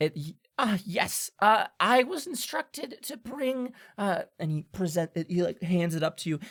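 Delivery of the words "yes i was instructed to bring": tiny, small, high, halting little voice. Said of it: "a little voice go".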